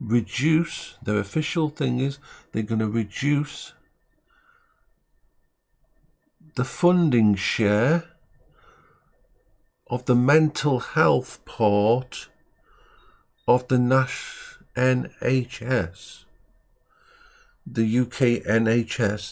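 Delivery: slowed-down delivery. Speaker stressing a point so there's no mistake; speaking slowly. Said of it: "I'll say this slowly".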